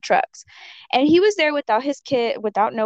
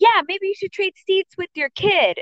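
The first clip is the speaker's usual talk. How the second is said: put-on, high, loud yelling; 8 semitones higher than usual. Retelling a drinking man yelling at the speaker in front of everyone: retelling a loud yell. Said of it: "he wants everybody to know around him that he's yelling".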